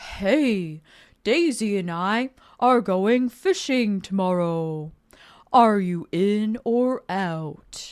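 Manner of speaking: deep booming character voice. Getting into character, the speaker reads a game character's lines in a deep voice. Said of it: "he has a deep voice".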